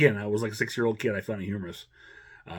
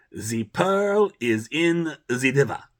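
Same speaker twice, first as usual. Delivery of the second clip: put-on loud, heavy German accent laid on thick; 4 semitones higher, 5 dB louder than usual. Quoting a character's recurring code word, in a thick german accent. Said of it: "speaking with his thick German accent".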